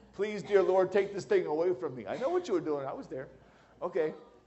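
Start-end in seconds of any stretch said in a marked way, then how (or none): 0.2-2.1 sobbing, blubbering, weeping through tears. Imitating a new mom on her first day home: imitating someone blubbering and crying. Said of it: "blubbering and crying and weeping and saying".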